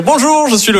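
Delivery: embarrassed, high, hesitant voice.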